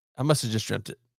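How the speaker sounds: ordinary talk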